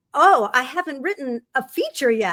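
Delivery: ordinary delivery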